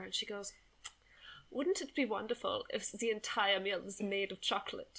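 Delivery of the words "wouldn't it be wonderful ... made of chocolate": put-on German accent. Retelling what the Lufthansa lady offered, imitating her German accent. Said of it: "this is my German accent".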